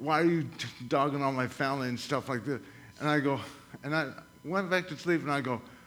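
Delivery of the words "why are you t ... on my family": ordinary delivery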